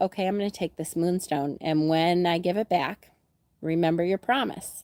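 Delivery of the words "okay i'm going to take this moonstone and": plain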